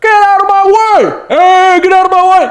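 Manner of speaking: overblown, very high, very drawn-out yell. Retelling a movie chase scene, imitating an over-exaggerated shout. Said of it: "it was very over-exaggerated".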